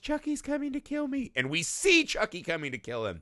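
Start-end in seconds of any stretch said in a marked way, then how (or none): 0.0-1.3 put-on tiny, very high, cute little child voice. Retelling a chucky movie scene as the little boy, in a cute voice. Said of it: "in his cute voice".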